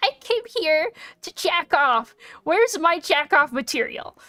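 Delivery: indignant, annoyed voice. Imagining viewers complaining to the uploader, mock-angry viewer complaint. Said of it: "people are gonna get angry".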